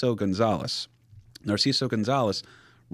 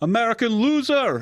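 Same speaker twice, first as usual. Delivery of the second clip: shrill put-on scream in a German accent; 13 semitones higher, 6 dB louder than usual. Retelling how a German fan screamed at him: imitating Marion Flannel screaming. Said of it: "And he screams".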